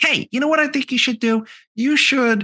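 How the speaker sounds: put-on very high, girly young girl's voice. Recalling a bar conversation from when the podcast started, imitating Phil. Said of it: "I sound like a twelve year old girl".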